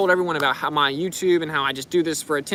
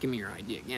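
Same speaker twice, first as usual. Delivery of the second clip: put-on, very soft, hushed, smug voice; 7 semitones lower, 13 dB quieter than usual. Retelling how someone demanded an ID while smirking: imitating a smirking person. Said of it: "he's smirking in my face".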